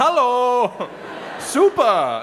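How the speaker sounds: very high, loud, silly German accent. Showing how German words that are English words sound: funny German-sounding voice. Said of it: "you say 'em in a funny voice".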